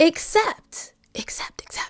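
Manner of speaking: dramatic, hushed, breathy teasing whisper.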